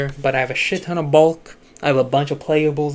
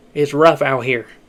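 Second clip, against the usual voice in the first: sudden southern American accent, raised voice; 5 dB louder than usual. Speaker talking about a cramped room, slipping into a southern accent. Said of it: "I randomly got a southern accent at the end there".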